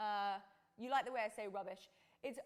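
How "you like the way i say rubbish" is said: normal talking voice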